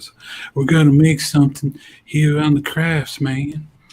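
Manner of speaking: put-on Louisiana accent. Told they sound like a YouTube crafts guy, imitating his Louisiana accent. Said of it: "He has the same Louisiana accent".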